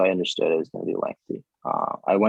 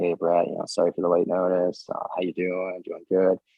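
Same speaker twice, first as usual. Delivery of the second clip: mock flat monotone, quieter. Retelling a caller's phone call to Brett, imitating a monotone voice. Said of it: "he's very monotone".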